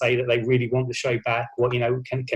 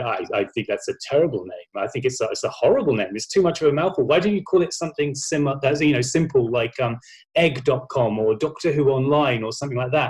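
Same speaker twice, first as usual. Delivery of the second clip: plain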